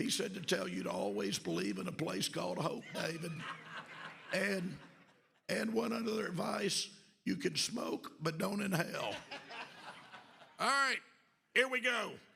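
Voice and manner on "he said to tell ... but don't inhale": put-on scratchy, raspy voice. Passing on President Clinton's message in a scratchy Clinton voice. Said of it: "with the scratchy voice, I can do my Clinton even better".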